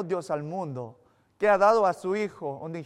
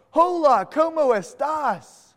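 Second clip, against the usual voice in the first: put-on high, heavily anglicized English-speaker accent on Spanish; 8 semitones higher, 6 dB louder than usual.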